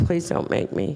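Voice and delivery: tearful, crying, begging plea. Retelling an argument over bringing back a car, acting out pleading while crying. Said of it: "And I'm crying".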